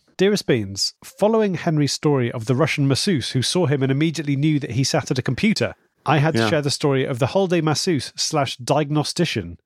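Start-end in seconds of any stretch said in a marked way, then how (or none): none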